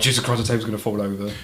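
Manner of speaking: usual speaking voice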